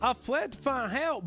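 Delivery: very high, slow, out-of-breath panting. Narrating a story, the speaker voices a young man's line, panting.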